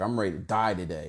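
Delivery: acted-out, enraged delivery with raw rage. Retelling a young man's words in a face-off: imitating an enraged kid. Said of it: "his rage that he had".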